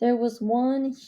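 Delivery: ordinary delivery, nothing marked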